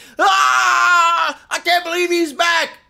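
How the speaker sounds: very high, drawn-out shriek of excitement. Talking about a favorite game's return, imitating people screaming. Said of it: "people were out here screaming".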